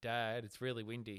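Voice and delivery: ordinary talk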